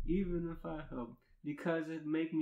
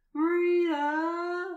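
booming, very loud, shrill, high, stretched yell; 10 dB louder than usual. Retelling how two coworkers shouted at a whining coworker: yelling like stressed lionesses. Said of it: "We both yell like stressed lionesses".

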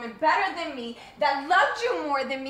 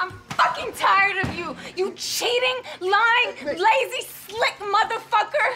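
all-out, furious, high-pitched yelling; 7 semitones higher, 4 dB louder than usual. Acting out a couple's fight to show how to de-escalate, angry Nikki outburst. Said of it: "Just calm down".

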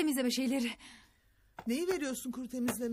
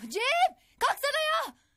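yelling, much higher and louder; 14 semitones higher, 7 dB louder than usual. An older sister waking her sibling in the morning, yelling. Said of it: "Ne bağırıyorsun psikopat gibi sabah sabah?".

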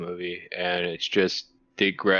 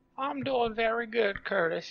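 weird, funny, very high put-on voice. Podcast co-host answering the opening greeting: weird funny voice. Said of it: "I'm just doing a weird, funny voice".

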